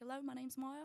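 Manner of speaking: put-on New Zealand accent. Speaker demonstrating the accent she once had in New Zealand, strong Kiwi accent. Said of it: "I used to have a really strong Kiwi accent".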